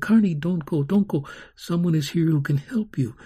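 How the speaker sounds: plain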